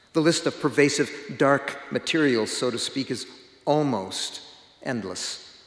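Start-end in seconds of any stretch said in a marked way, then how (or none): 3.7-4.5 almost drawn out slow and stressed hard. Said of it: "I emphasize the word almost intentionally".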